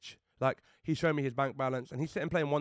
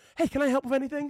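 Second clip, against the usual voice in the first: put-on, very high, squeaky voice; 12 semitones higher, 4 dB louder than usual. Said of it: "He got that voice".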